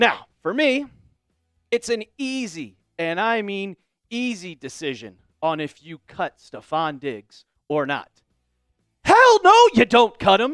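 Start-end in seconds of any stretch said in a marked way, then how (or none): 9.0-10.6 very high-pitched, loud screamed outburst. Telling viewers whether to cut a player, screaming. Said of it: "Sorry for screaming".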